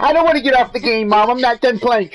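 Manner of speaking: put-on very high, shrill, loud bratty childish whining tantrum. Acting out a kid yelling back at his mother over quitting his game, as a tantrum. imitating a kid's tantrum. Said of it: "his mom yelling at him".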